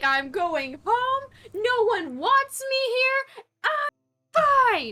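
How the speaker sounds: put-on pissed-off huff. Playing a character storming off to go home: pissed off. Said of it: "Sienna is pissed".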